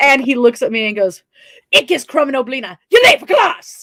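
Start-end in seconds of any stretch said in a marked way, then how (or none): 1.7-3.8 put-on cartoon character voice. Retelling how a man at BotCon, asked to do the voice, did it. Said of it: "Do the voice".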